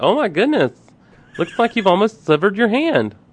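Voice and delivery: high, camp, flamboyant paramedic voice. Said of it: "if it was a flamboyant paramedic".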